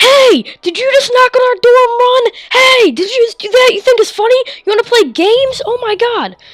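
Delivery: acted-out furious, accusing yell, very high. Retelling how a neighbor girl came out of the house: imitating a girl yelling.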